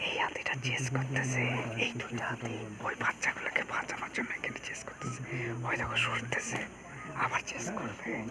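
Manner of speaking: hushed, soft, low whisper.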